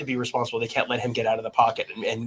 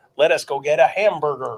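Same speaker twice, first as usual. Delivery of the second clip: put-on American accent, foreign-sounding; 4 semitones higher, 4 dB louder than usual. Showing how foreigners sound doing American accents, in a foreigner's fake American accent. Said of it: "foreigners doing American accents".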